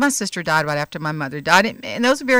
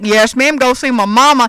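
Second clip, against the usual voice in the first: put-on Texan voice; 6 semitones higher, 8 dB louder than usual. Retelling a chat with an old car-service driver from Texas, imitating Tom's Texas talk. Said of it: "he talked like this".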